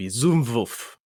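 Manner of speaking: offhand, tossed-off put-on German accent. Speaker showing how a name would sound, german accent. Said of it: "if I really wanted to put a German accent for it".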